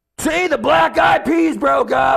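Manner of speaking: put-on very high, slow drunken yell.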